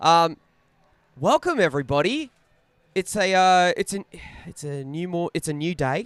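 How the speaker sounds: rough, croaky, hoarse voice. Welcoming everybody after going out for a drink with a friend, in a croaky voice. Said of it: "You sound a bit croaky".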